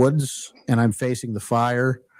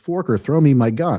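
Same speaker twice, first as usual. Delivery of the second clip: ordinary talk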